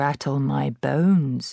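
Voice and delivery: eerie ghost-story spooky parrot voice. Narrating a story, the parrot talks to Matilda, giving an imitation of a spooky voice. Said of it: "giving a wonderful imitation of a spooky voice".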